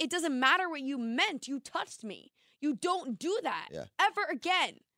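mock stern, furious, angry yelling. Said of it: "I know it was screaming a lot".

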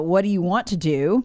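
ordinary delivery

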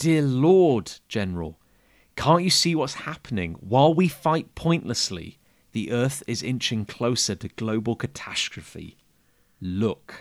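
ordinary talk

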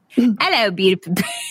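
exaggerated put-on British accent. Trying out a new voice for the show's greeting, overdone british accent. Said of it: "Too British".

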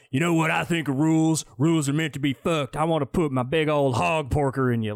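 put-on southern accent with sleazy tone. Quoting a sleazebag side character from the movie: imitating a southern accent. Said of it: "everyone with a southern accent in this movie".

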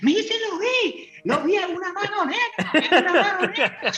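imitated girl's scream. Retelling how a girl at the window saw a hand: imitating a girl screaming. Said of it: "Y empezó a gritar".

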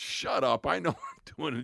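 mild, rough-edged, creaky bickering tone. Retelling a player answering a teammate who yells at him: imitating someone yelling. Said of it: "they're yelling at each other".

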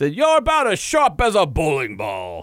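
rooster-like Southern drawl. Quoting one of a cartoon rooster's sayings, in a Foghorn Leghorn drawl. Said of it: "homage, if you will, to uh, Foghorn Leghorn".

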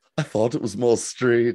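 mock upper-class accent. Retelling a scene where Declan drops his Irish act: Declan's posh voice. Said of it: "drops the Irish accent and goes totally posh".

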